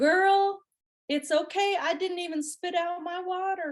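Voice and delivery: put-on cutesy Nashville accent, high-pitched. Retelling a woman whose car she mistook for her rental forgiving her: cute little Nashville accent. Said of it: "in the cutest little Nashville accent ever".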